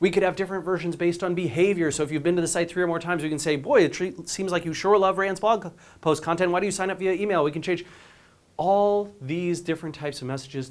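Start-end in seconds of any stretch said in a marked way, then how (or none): none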